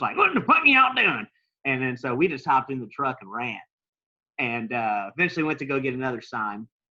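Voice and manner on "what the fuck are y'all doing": put-on shrill, booming yell in South Louisiana accent. Retelling how someone with a shotgun came outside and yelled, in a South Louisiana accent. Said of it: "it was like South Louisiana talk".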